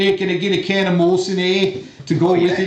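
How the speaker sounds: joking, put-on New York accent. Joking about ordering a Molson: put-on East Coast New York accent. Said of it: "doing some kind of weird, you know, East Coast New York thing".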